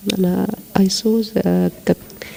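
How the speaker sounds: quiet whispered delivery.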